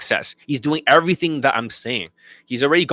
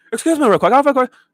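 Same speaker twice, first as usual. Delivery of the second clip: mock fast talking, higher and louder; 12 semitones higher, 4 dB louder than usual. Mocking a client who talks super fast to women: imitating fast talking. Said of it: "They talk super fast".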